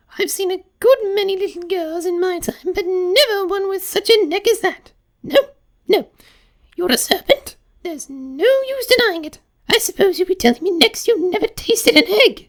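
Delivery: very high, shrill, contemptuous, accusing shriek. Narrator voices a pigeon confronting a girl, contemptuous shrieking pigeon. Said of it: "A large pigeon had flown into her face, and was beating her violently with its wings. "Serpent!" screamed the pigeon. / raising its voice to a shriek, / Why, I haven't had a wink of sleep these three".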